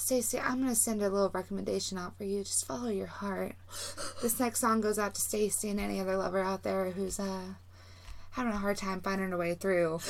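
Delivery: soft, calming, hushed voice kept level in one tone. Describing a radio host answering a caller, in Delilah's calming one-tone voice. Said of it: "she has a very calming voice. It's always one tone".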